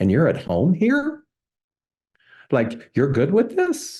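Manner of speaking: cheeky, high, swooping smart-aleck needling tone. Retelling how he put the question: imitating a smart-aleck tone. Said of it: "I didn't know he was such a smart aleck".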